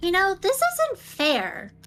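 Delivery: very high, loud, swooping put-on little girl voice. Narrating to the players, voice the one they all hear: little girl voice. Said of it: "hear a little girl's voice".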